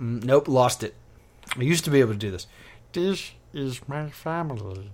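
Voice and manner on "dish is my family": very slow, soft, drawn-out cartoon alien voice. Prompted by the other speaker, the speaker attempts a Stitch impression. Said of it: "I do a decent Stitch".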